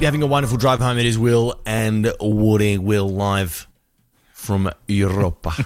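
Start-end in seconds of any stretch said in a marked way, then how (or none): 2.8-5.5 low, slow, overdone, very drawn-out rolled R's. A host signing off to listeners driving home: exaggerated rolled R's. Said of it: "I don't think Europeans even roll their R's like that".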